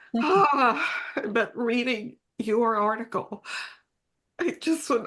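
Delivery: high, tearful voice breaking. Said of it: "I hope I can say this without crying".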